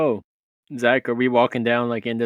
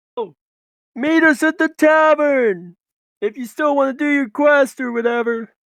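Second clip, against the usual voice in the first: booming, very high, far-carrying shout; 14 semitones higher, 5 dB louder than usual. Role-playing game player casts a cantrip and turns to call back, booming yell. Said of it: "do booming voice and just turn around and yell".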